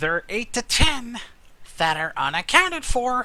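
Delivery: squeaky, very high puppet-like character voice. Answering a question about the missing people, the speaker replies in a Muppet-like character voice. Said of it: "that voice makes me think of the Muppets".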